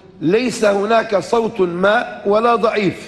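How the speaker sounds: ordinary talk, nothing marked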